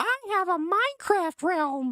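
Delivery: very high, drawn-out, slow cartoon voice. Repeating a chat message: Ralphie from The Simpsons voice. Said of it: "I literally read that in Ralphie's voice from The Simpsons".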